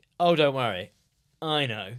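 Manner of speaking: self-satisfied, all-knowing tone. Imitating Richard Keys acting like he knows: smug Richard Keys impression. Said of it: "the kind of very smug feeling".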